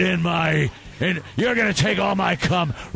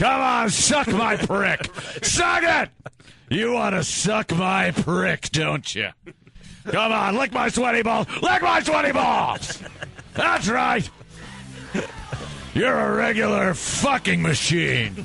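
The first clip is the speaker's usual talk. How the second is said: mock angry voice, pitched higher; 4 semitones higher than usual. Mocking the angry porn audio the others describe: mock angry porn talk. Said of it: "It's like angry Vince porno".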